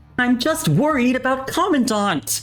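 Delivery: very high, plaintive, whiny protest. Narrator reads a flailing character's futile protest, whining. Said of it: "as he whines".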